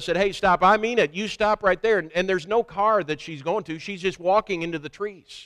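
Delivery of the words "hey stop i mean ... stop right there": acted-out loud, high, angry, authoritative shout. Retelling his last warning yell at the silent stranger: retelling an angry yell. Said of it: "I yelled at her one more time".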